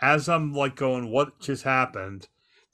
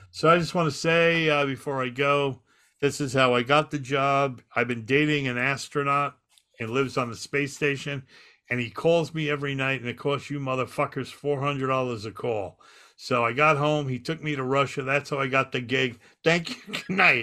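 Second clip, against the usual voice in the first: usual speaking voice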